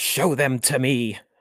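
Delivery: mock, very slow, high, stretched-out scream. Retelling a movie scene where a character screams at someone: imitating Doctor Gordon screaming. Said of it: "he's, like, screaming".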